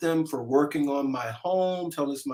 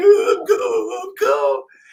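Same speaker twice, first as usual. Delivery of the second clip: high, loud, sing-song, drawn-out sobbing; 10 dB louder than usual. Speaker retelling being out in the cold, imitating own crying. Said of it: "and I'm sitting there crying".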